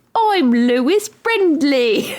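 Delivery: high-pitched put-on British accent from American speaker. Retelling how Sarah kept doing her British accent: imitating Sarah's put-on British accent.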